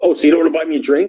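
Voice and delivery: indignant, annoyed tone. Retelling a woman's reply after he said he had no money, mock-angry. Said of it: "she gets like right mad at me".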